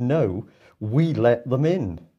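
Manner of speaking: mock very slow, drawn-out shouted delivery. Retelling what someone at the back of the room shouted: retelling a shout.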